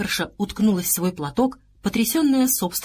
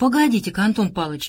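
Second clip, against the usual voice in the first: plain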